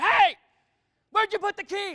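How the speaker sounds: loud, high yell. Retelling how they couldn't find the restroom key: retelling yelling at their kids. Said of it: "I started yelling at my children".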